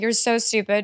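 normal talking voice

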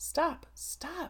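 exclaimed, crying out high. Delia springs to her feet, crying out. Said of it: "Delia cried, springing to her feet".

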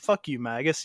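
plain

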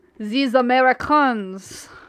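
amateurish put-on French accent. Reacting in a chat with a friend, in a put-on French accent. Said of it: "I'm not very good at a French accent. I do my best".

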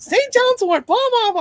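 mock furious screaming, very high and shrill. Speaker retells a man who called up and started screaming at them, mock screaming. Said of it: "he starts screaming at me".

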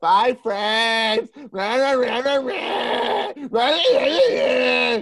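very slow, high-pitched, loud, drawn-out voice. Mocking a ghost-video channel the group makes fun of: imitating Chills. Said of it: "'cause he talks like this".

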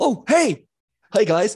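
put-on very high, loud, good-boy golden-retriever dog voice. Voicing a golden retriever archer greeting the party: golden retriever character voice. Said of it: "he comes around and he goes".

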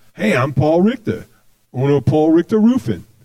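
put-on regular-guy North Jersey accent. Imitating a roofing company owner from a local commercial, in a north jersey accent. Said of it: "He's like from North Jersey, sounds like".

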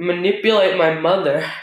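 normal talking voice

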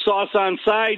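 tossed-off, casual calling out. Retelling calling out a request to the host: retelling a yell. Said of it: "I yelled to you".

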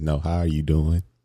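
imitated straight-faced, serious tone. Retelling how the other speaker once asked: imitating a straight-faced question. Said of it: "looked at me with a straight face".

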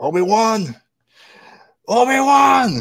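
scream, pitched very high. Speaker describes a scene where everyone screams a name; retelling a scream. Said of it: "everyone just screams his name".

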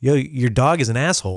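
ordinary talk, nothing marked

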